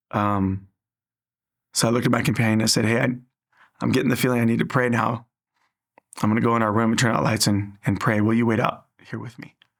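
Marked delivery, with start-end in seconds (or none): none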